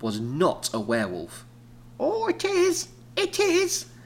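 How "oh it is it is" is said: very high, slow, drawn-out, bad old-lady voice. Playing an old lady arguing with MC about a stray cat, in a bad old lady voice. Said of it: "A bad old lady voice".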